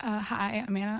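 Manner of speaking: voice cracking. Invited to introduce herself, a guest says hi, voice cracking. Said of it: "sorry, my voice cracking".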